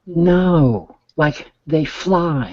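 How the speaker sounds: put-on high-pitched, very slow little girl's toddler voice.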